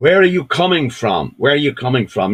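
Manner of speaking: put-on Birmingham (Brummie) accent. Telling a Troubles story, a young British soldier stops a man at night; Brummie accent. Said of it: "In a Brummie accent".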